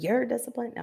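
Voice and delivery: put-on laughing, high, incredulous, unbelieving tone. Speaker acts out their partner Darwin's reaction, imitating Darwin laughing. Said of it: "would be sitting here laughing".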